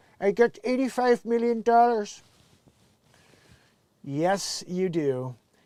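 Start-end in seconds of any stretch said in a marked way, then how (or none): 0.2-2.2 put-on supervillain voice. After reading a news headline aloud, the speaker does a Doctor Evil impression. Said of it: "my Doctor Evil impression".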